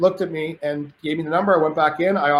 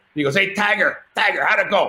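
put-on tough Greek-accented voice, much higher; 3 semitones higher than usual. Retelling a phone call where Jimmy asks how the deal went, imitating Jimmy's tough Greek voice. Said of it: "Jimmy had like this tough Greek guy".

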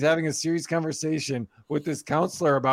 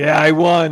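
put-on proud, smug, gloating kid voice; 10 dB louder than usual. Acting out a son's reply, imitating a proud kid. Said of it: "Be all proud of it".

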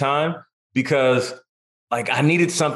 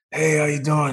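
put-on relaxed, laid-back voice. Retelling meeting Al Pacino on a red carpet: super chill Al Pacino impression. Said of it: "Pacino's super chill".

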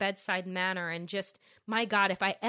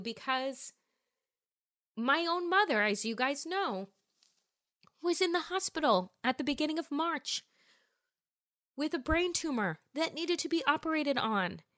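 choked up, voice catching, pitched up; 6 semitones higher than usual. Speaker explaining something emotional to listeners, choked up. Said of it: "I'm getting choked up explaining it to you".

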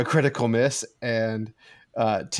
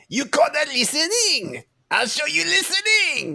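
put-on swooping, high-pitched French accent. Game master voices a Frenchman heard in a player's mind; French accent. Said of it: "you hear the sound of a Frenchman".

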